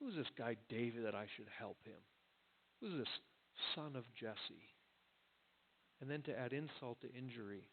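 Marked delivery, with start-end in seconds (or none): 0.0-4.7 scornful, mocking, scathing, dripping with sarcasm. Quoting a scathing reply to the messengers: acting dripping sarcasm. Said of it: "Those words are dripping with sarcasm".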